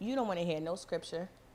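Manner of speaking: ordinary talk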